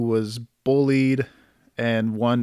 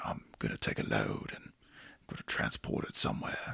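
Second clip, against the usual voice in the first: words breathed out, done badly; 15 dB quieter than usual. Joking about the Transporter movies: bad Jason Statham impression. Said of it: "just doing a bad impression of".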